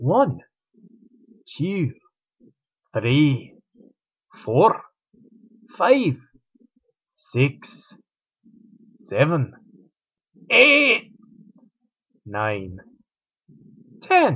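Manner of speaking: put-on Scottish accent. Host of a pep-talk segment counting to ten for listeners: Scottish accent. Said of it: "In a Scottish accent".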